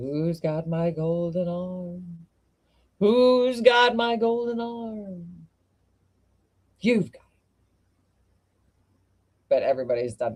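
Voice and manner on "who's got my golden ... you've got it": eerie ghost voice, arm drawn out. Telling a ghost story and voicing the ghost, in a spooky ghost voice. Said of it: "it's a spooky ghost".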